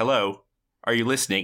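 normal talking voice

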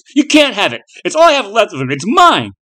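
piercing, shrill, very high swooping shout. Jason refuses the thing demanding the blood, shouted. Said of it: "he shouted".

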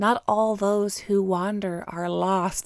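unhurried, slow, measured female film voiceover narration. Retelling a film's ending: Kirsten Dunst impression. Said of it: "That was a very good impersonation".

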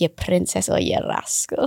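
weird, bad put-on Italian accent. Retelling a man's odd sayings, the speaker quotes him in a weird italian accent. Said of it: "Irish, then".

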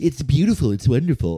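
limp, dainty, fey delivery. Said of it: "sticking his hand out all pussy".

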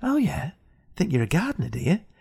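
menacing, evil, nasty threatening tone. Doing a character the speakers created: Evil Alan Titchmarsh voice. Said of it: "a character, Evil Alan Titchmarsh".

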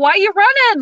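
put-on, very high, loud yell. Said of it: "he yelled at me and he's like".

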